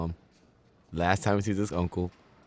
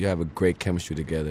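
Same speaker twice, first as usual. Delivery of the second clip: ordinary talk, nothing marked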